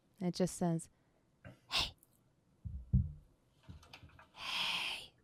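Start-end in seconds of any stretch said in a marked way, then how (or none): 1.7-5.1 hushed, breathy whisper. Voicing a voice heard in a player's head: whisper. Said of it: "you hear a whisper".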